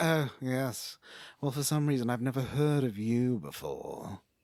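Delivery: mock snooty, snotty woman voice. Retelling how the lady whose house it is talks: imitating a snotty lady. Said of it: "she's real snotty".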